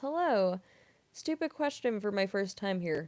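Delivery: ordinary delivery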